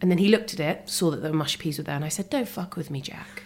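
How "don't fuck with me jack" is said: calm, soft, menacing tone. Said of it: "but I said it very calmly".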